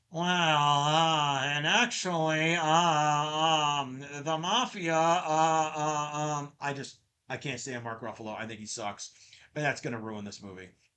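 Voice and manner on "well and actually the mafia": whiny, very slow drone, "um" stretched out. Imitating how the cat would sound when voiced: whiny Mark Ruffalo impression. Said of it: "all I'm gonna hear is, is Smart Hulk".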